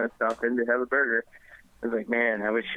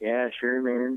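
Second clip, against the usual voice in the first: put-on hippie voice. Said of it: "He sounds like the biggest fucking hippie".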